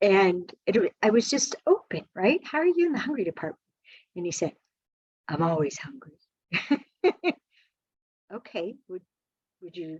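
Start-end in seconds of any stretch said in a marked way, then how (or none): 5.3-6.2 put-on low gruff voice, quieter. Retelling a man's reply to the speaker's question, imitating his low, gruff voice. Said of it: "he has this really low, gruff voice".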